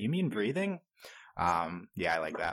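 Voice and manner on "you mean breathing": sunny, chipper, lightly sarcastic, high-pitched. Quoting Piper's reply about breathing: imitating Piper, chipper and smiling. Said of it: "She's smiling. She's like".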